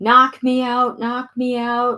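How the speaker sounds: high-pitched, frantic screaming and yelling out. Retelling being in pain at the first place: retelling own screaming. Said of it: "I was screaming".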